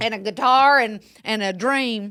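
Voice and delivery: mock Southern accent, drawl. Hosts discussing the Hunger Games prequel quote a line in a put-on Southern accent. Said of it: "We cannot stop talking about this accent".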